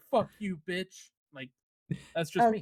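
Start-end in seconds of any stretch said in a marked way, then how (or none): 0.1-1.1 blunt, insulting gamer trash-talk tone. Retelling what was said to enemies in a game: imitating own trash talk. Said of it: "talk shit to the enemy".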